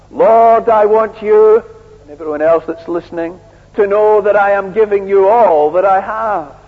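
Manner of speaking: showy, crowd-milking martyr voice, loud and high. Contrasting a quiet giver with the religious leaders, imitating them in a mock-martyr voice. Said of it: "cry out in a martyr voice".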